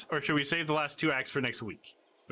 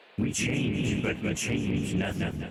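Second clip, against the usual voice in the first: eerie spooky voice, lower; 6 semitones lower than usual. Reading a talking artifact's lines in a game: spooky voice. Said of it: "I gotta give them a spooky voice for the artifact".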